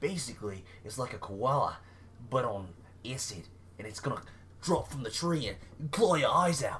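put-on Australian accent. Retelling how Australians trick tourists: put-on Australian accent. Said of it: "impressed with your accent right now".

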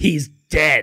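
annoyed, angry, blunt, flat delivery. Imitating how the other speaker just said it: imitating an angry tone. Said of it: "you were angry".

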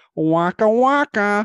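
belted out, high-pitched and loud. Showing someone who doesn't know Fozzie, Fozzie Bear voice. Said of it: "Just did it for you".

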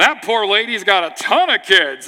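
loud, deliberate, unhurried, drawn-out delivery. Retelling a grandfather's remark at a restaurant dinner: imitating someone saying it loudly. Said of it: "he said it really loud".

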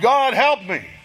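put-on loud crying out, pleading. Retelling a man's cry echoing through a cave, crying out loud. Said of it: "Just a cry out loud".

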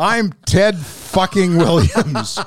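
high-pitched screaming at the top of the lungs. Retelling how a hitter screamed during batting practice: imitating Ted Williams screaming. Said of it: "he would scream at the top of his lungs".

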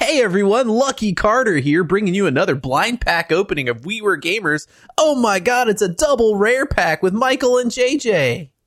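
very high, full-energy put-on hype-host voice. Opening a blind pack of cards on video, the speaker puts on a YouTuber intro voice. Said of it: "I gotta turn on a certain type of voice here".

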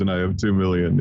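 plain

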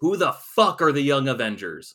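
very loud, high-pitched screaming yell. Recapping a comic issue, the speaker imitates J. Jonah Jameson screaming. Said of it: "in his usual tone of voice, you know, screaming, yells".

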